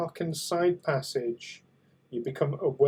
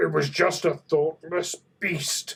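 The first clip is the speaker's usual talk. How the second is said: obviously gruff, rough voice. A game master voicing a Klingon the players overhear, in a gruff, obviously Klingon voice. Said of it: "in a much more gruff, very obviously Klingon voice".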